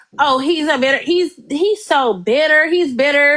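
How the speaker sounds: ordinary delivery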